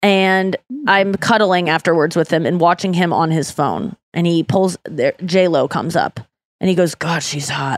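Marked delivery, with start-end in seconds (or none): 7.0-7.8 muttered under the breath, much quieter and slower. Retelling what a man said seeing J-Lo on his phone, muttered under his breath. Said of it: "like just under his breath".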